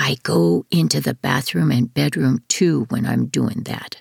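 low, secretive, confiding, conspiratorial tone. Devin, after clearing his throat, answers someone about being restrained, in a conspiratorial tone. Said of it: "says in a conspiratorial tone".

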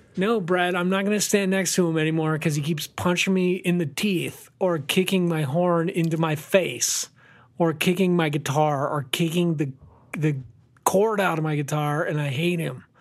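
usual speaking voice

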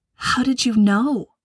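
hushed whispering. She speaks to Ira as he grabs her suitcase in the hallway, whispering. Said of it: "She whispered".

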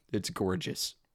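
ordinary delivery

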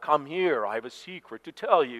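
lurching, mechanical robotic monster voice. Playing a chasing game around the house, luring the others, robotic Frankenstein voice. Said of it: "I would robotically, or almost like Frankenstein".

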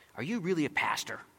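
sharp, cutting, challenging tone. Retelling how the woman after the show questioned him: imitating a sharp question. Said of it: "this woman says to me very sharply".

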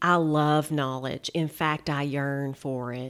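put-on thick Southern accent, low and slow. Quoting a favorite line from a show, as Charlene, in her thick Southern accent. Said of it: "in her thick Southern accent".

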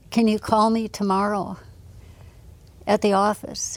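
ordinary talk

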